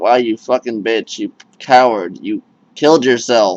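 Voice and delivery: ordinary talk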